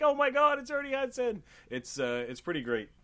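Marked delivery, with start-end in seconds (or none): 0.0-1.4 put-on giddy, thrilled, very high-pitched outburst. Retelling how the other speaker reacts every time: imitating someone really excited. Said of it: "you're really excited. You're like".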